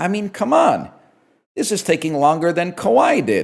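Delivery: computer-generated synthetic voice, swooping pitch. Retelling a line an ai voice said, imitating the ai voice. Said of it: "an A I voice goes".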